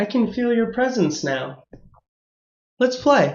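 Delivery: put-on small, soft, high little-girl voice. A game master voices a little girl heard in a character's mind, little girl's voice. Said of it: "you hear the little girl's voice again as she says".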